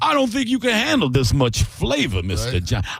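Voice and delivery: lively, high, swooping, animated voice. Acting out the slave Clarence answering the owner: acting as the slave Clarence. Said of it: "And he's like".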